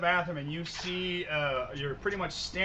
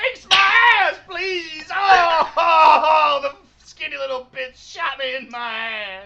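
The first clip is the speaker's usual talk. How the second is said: piercing, very high, full-volume scream; 11 semitones higher, 13 dB louder than usual. Voicing a character who has been shot: screaming. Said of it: "So please stop screaming".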